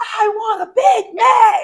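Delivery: loud, very high-pitched, very slow drawn-out shout. Describing rage-bait videos at McDonald's, mimicking someone shouting an order. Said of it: "they just start shouting at their uh, order".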